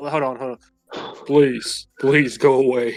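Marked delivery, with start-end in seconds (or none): 1.3-3.0 attempted deeper voice, only barely lower than normal. Acting a scene, trying a deeper voice as a partner suggested, attempted deep voice. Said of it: "You could do like a deep voice".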